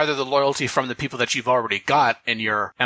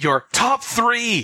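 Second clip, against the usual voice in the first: playful mock shouting, higher pitch; 10 semitones higher than usual. Reading out a thread title written in all caps: mock yelling. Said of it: "I have to yell that because it's in all caps".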